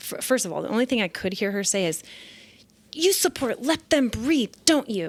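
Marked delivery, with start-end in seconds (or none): 2.9-5.1 play-acted upset, accusing woman's voice, pitched up. Recounting what an upset woman said to the speaker, imitating an upset woman. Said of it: "She was so upset".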